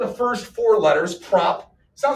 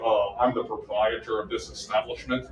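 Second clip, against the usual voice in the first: very low, hushed, formal voice; 11 semitones lower, 7 dB quieter than usual. Explaining a Karen mode scenario, imitating a shop owner. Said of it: "a guy might walk out and he would".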